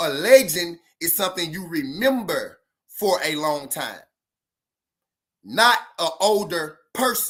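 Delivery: very slow, deliberate, clearly spelled-out delivery. Repeating a point for the people in the back, very slow. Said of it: "I'm gonna say it real slow".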